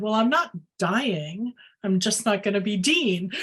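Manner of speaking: plain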